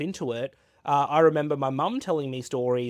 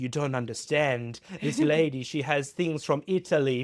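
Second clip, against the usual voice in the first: awful, terrible put-on Italian accent. Recalling how Leo introduced the speaker to the guest, imitating Leo, terrible Italian accent. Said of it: "Excuse my terrible Italian accent uh".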